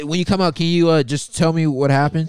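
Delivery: high, loud, sarcastic mocking tone. Mocking another speaker's request to report back afterward: sarcastic imitation of another speaker. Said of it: "I smell a little sarcasm".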